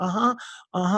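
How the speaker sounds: put-on tearful, crying voice. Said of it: "she's got tears streaming down her face".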